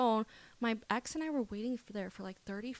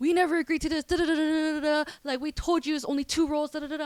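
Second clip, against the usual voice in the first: put-on screaming, higher and louder; 6 semitones higher, 9 dB louder than usual. Retelling how a restaurant manager came out to the table: imitating a screaming manager. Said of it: "she starts screaming at us".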